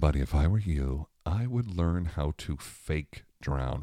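acted-out whispering. Retelling what they whispered to a seven-year-old, retelling a whisper. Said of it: "I'm whispering it to him now".

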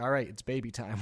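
plain

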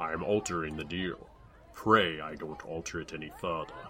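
deep, low voice sunk down. A narrator reads a boy's line his mother didn't hear, in a deep voice. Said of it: "What Doug said in his deep voice was".

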